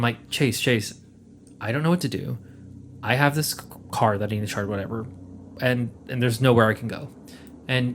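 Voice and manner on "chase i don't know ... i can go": ordinary delivery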